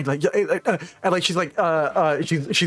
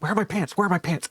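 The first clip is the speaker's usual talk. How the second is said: put-on half-whispering; 2 semitones higher than usual. Voicing a character asking for her pants: acted half whisper. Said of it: "a half a whisper".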